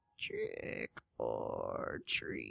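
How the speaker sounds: raspy whispered moan. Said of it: "he moaned in a raspy voice".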